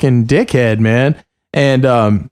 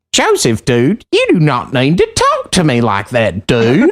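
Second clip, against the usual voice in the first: swooping, animated caricature voice. Giving an example of an impression: Jordan Powers impression. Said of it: "doing a really good Jordan Powers".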